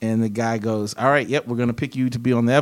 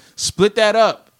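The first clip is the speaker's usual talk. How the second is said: mock yell, pitched way up, shouted; 10 semitones higher, 4 dB louder than usual. Telling how a fellow comedian reacted to the money, retelling a yell. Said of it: "one of them just yells".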